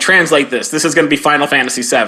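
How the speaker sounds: plain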